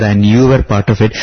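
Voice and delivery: plain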